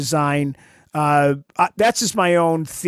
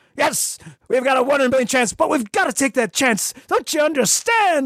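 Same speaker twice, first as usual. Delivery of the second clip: overacted, pitched-up dramatic delivery; 9 semitones higher than usual. You're on a podcast, imitating a favorite speech you loved playing as a child; overacting Captain Kirk impression. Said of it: "it's that overacting. And it was fun to imitate".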